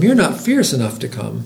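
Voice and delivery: plain reading voice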